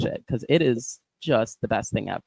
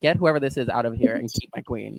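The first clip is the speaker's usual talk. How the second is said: ordinary talk, nothing marked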